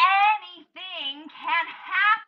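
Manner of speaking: put-on screaming, high and loud. Describing a performer on a platform high above the stage, imitating someone screaming. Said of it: "they just start screaming".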